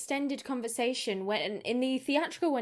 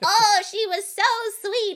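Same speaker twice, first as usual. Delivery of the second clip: overdone put-on goblin voice, higher and louder; 9 semitones higher, 9 dB louder than usual. Imitating a creature pretending to be a goblin: overdone put-on goblin voice. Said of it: "overcompensating trying to be a goblin".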